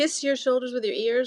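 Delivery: oddly altered, high voice. Guiding listeners through a breathing exercise with shoulders raised to ears, funny voice. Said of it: "That's why my voice is funny".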